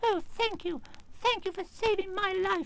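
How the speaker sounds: tiny, very high, squeaky mouse voice. Narrator voicing the field mouse speaking to the Tin Man: squeaky little voice. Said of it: "said in a squeaky little voice".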